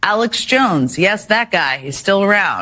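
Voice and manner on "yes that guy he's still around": scoffing, derisive, dry mocking tone. Reporting a post from a conspiracy theorist, mockery in her voice. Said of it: "Do you hear the mockery in her voice?".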